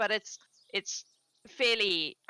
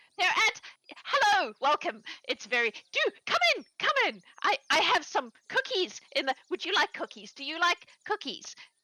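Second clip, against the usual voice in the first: excited woman character voice, higher; 7 semitones higher, 3 dB louder than usual. Voicing a woman welcoming visitors in and offering cookies: excited Gertrude voice. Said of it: "clearly very excited to have someone to talk to".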